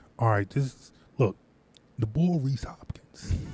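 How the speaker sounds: very quiet, hushed, low-key under the breath. Co-host on a sports show moving on to a new player, very quietly. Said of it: "You said that very quietly".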